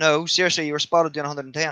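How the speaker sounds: ordinary delivery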